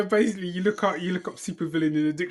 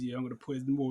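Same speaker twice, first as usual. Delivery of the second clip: put-on quiet muttering, lower and quieter; 5 semitones lower, 11 dB quieter than usual. Acting out an imagined man's aside over drinks: imitating someone saying it quietly. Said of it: "the man quietly goes".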